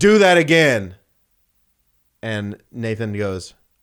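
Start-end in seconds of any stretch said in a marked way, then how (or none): 0.0-0.9 loud, high-pitched holler. Retelling how a man yelled from inside his house: imitating a neighbor yelling. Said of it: "he yells".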